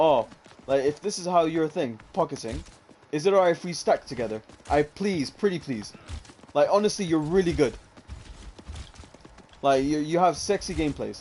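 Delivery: ordinary talk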